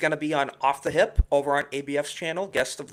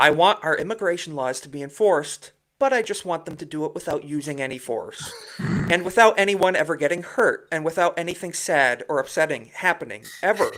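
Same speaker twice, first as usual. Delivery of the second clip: ordinary delivery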